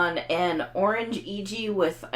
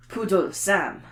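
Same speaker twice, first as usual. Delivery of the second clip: bad put-on French accent. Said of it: "your bad French accent".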